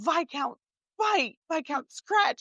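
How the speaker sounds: put-on high, blubbering sobbing through the words. Retelling what he said on the phone while crying, imitating someone ugly crying. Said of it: "like ugly crying now".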